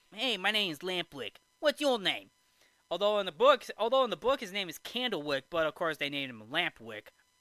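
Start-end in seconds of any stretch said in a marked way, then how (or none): 0.2-2.3 put-on delinquent kid voice with New York accent. Retelling the film, voicing Lampwick introducing himself: Lampwick's New York accent. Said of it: "a delinquent boy with a New York accent".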